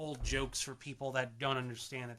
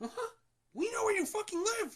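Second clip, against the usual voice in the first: very high-pitched cartoon voice; 4 dB louder than usual. Doing the best Mickey voice possible: Mickey Mouse voice. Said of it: "That's the best Mickey voice I can do".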